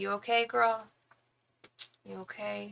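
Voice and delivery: slow, drawn-out, caring motherly voice. Imitating a viewer's motherly concern for the stuffy voice: imitating a caring mama. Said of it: "The mama's coming out".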